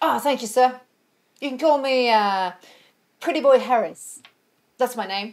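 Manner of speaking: put-on broad, thick Cockney accent, loud and slow. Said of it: "Full on Cockney".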